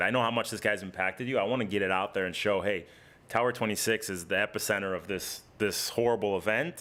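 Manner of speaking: usual speaking voice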